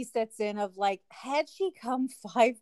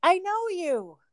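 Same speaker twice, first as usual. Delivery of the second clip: acted high yell, as if across a distance; 6 semitones higher, 3 dB louder than usual. Retelling a woman calling across the street to the speaker, retelling a yell across the street. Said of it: "We're yelling".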